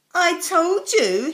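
triumphant, proud, loud voice. Jonathan opens the cupboard before his school friends, proud announcement. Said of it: "he announced proudly".

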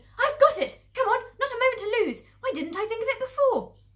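very high, loud, full-throated sudden shout. Narrator reads a fox father jumping up and calling to his family, shouted. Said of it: "He jumped up and shouted".

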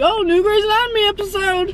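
excited, high-pitched gushing delivery.

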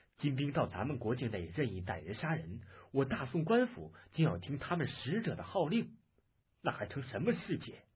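ordinary delivery

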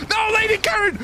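high, desperate, frantic pleading yell.

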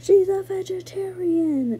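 very high, loud, mad, angry near-yell. Retelling how a cousin practically yelled at the lady: retelling an angry yell. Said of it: "practically yelled at the lady".

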